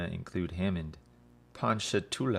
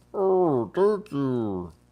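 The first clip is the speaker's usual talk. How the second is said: very loud, high, awkward put-on turtle puppet voice; 8 semitones higher, 9 dB louder than usual. Playing a turtle in a made-up exchange, in a turtle voice that can't talk. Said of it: "I'm a turtle and I sound really like I don't know how to speak".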